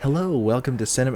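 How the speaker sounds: snobbish, quiet public-radio tone. Joking about how they'll introduce the other speaker next time, snooty NPR radio voice. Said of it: "snooty N P R radio, like public radio".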